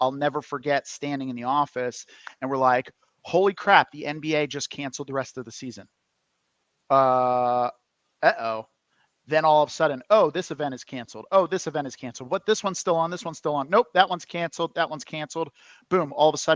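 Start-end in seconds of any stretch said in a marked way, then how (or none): none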